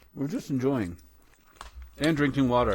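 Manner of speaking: speaking while chewing, mouth full. Co-host apologizes for eating during the episode, talking with mouth full. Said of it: "Sorry we're talking with our mouth full".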